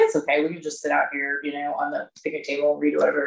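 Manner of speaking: plain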